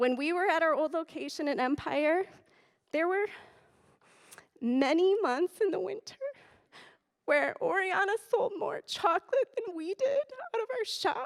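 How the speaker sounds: teary, choked-up voice. Thanking the Oryana co-op for selling the shop's chocolate, speaking teary. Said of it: "I knew I was gonna get teary".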